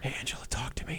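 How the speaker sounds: very quiet, hushed, breathy whisper. Retelling a past attempt to talk dirty to Angela: imitating own past whisper. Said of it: "What are you whispering for?".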